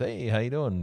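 cheery, upbeat radio-host voice. Speaker shows how hosts of lighter topics can sound, upbeat radio voice. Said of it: "They can do the radio voice".

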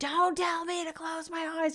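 put-on very high screaming nine-year-old child voice. Retelling how a nine-year-old screamed at her during a test: imitating a child screaming. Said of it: "she started screaming at me".

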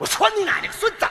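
high, loud, angry cursing outburst.

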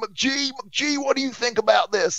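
mock, high rant in a fake American accent.

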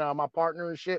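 ordinary delivery

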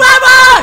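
loud, high, triumphant victory yell.

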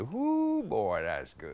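put-on slow, swooping Cajun accent, hard to make out. Imitating a TV cook's saying: Justin Wilson Cajun accent. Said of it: "he had that kind of accent".

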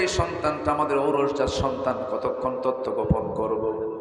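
ordinary delivery

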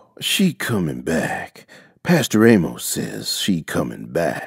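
deep, low, hushed voice. Reading a story, a character answers about a woman who left, speaking low. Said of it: "Papa Day speaking low".

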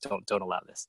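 mimicked whisper. Retelling how the colleague leaned over and spoke to her, retelling a whisper. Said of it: "He's like whispering to her".

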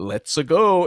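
very loud, booming, belted-out delivery. Imitating a line from a movie trailer: imitating Chris Pratt as Mario. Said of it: "he says some sort of line that's like".

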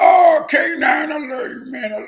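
very loud, very high, booming, showy put-on gush. Recalling a fight night and quoting praise he got, Don King voice. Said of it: "in my Don King voice".

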